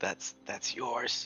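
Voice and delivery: hushed whisper. Leaning over to another character while someone defends a story: whispering. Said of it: "just whisper".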